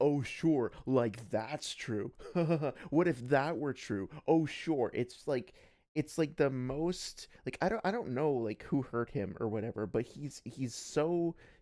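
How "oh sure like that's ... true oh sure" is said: put-on snide, sarcastic, condescending, talking-down tone. Imitating a streamer who repeats things back: imitating Surfbone's sarcastic condescension. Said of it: "extremely crappy and condescending and sarcastic".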